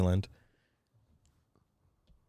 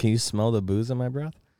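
usual speaking voice

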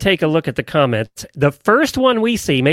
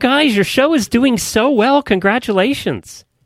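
surprised, taken aback, pitch raised; 6 semitones higher than usual. Speaking to the show's hosts about their show, sounding surprised. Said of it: "I don't know why you sound so surprised".

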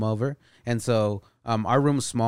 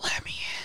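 put-on old, breathless, winded whisper with distinct words. Retelling what the voice at the door said: imitating an old, out-of-breath clear whisper. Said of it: "Like a whisper, but, like, clear whisper".

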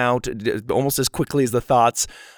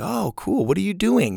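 open, innocently curious, light, pitched-up voice; 8 semitones higher than usual. Demonstrating two tones of the same question: innocent curiosity. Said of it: "that kind of innocent curiosity".

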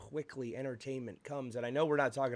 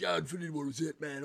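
generic, typical bro way of talking; 2 semitones higher than usual. Speaker mocks how the typical bro would sound, in a typical bro voice. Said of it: "sound like the typical, like, bro".

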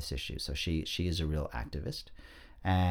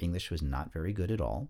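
ordinary talk, nothing marked

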